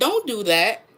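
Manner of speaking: very calm, steady, even voice. Retelling what was said to another woman's son, very calmly. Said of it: "I said very calmly".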